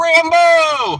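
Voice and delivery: high, loud yell, projected as if across distance.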